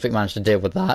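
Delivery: cracking voice. Recapping the quests done so far, the speaker's voice cracks. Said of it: "But voice crack".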